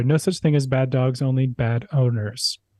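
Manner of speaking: ordinary talk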